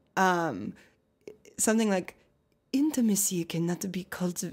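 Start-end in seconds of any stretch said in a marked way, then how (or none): 2.7-4.5 put-on sensual French voice. Answering a request to do an Esther Perel impression. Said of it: "Can you do an impression of her?".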